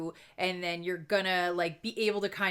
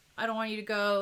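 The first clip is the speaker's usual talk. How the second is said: put-on crying, tearful voice; 3 semitones higher than usual. Retelling a character's farewell scene, imitating someone crying. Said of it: "and she's crying".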